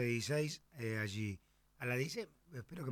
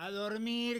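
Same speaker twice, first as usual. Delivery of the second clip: mock shout, loud and pitched up; 11 semitones higher than usual. Recounting a neighbour across the street who yelled at the twins, retelling a shout. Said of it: "que le gritaba".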